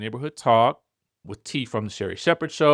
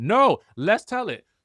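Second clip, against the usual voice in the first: put-on angry man voice, slower; 6 semitones higher than usual. Recounting a scene they watched, the speaker voices the man: imitating an angry man. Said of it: "he is mad, mad".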